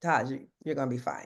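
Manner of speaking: calm, soft, reassuring voice. Quoting a man who always said this, imitating his calm voice. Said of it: "he would say it with such a calm voice, like".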